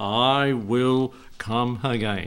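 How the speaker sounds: firm, emphatic preacher voice. A preacher recalls an old preacher's repeated words: imitating M.A. Butler's loud voice. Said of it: "with his loud voice".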